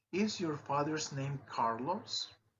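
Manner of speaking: pitch rising on the word Carlos. Teaching yes-no question intonation, rising pitch on Carlos. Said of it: "in just no questions, like in the two last examples, the intonation or the pitch goes up".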